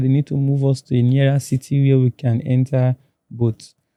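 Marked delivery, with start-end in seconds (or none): none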